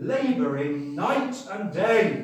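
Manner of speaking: heavy stress on "night", stretched slow and loud.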